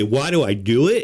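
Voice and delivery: normal talking voice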